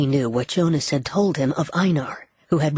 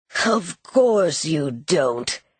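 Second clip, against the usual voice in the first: harsh rasp with a cruel edge. Reading Trademaster's reply to Gabe in a story, raspy. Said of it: "He rasped".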